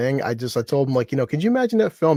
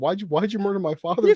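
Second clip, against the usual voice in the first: high fake sobbing in a tiny voice; 6 semitones higher than usual. Retelling a movie scene as the small daughter alien: mock crying. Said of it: "half the size and crying, like".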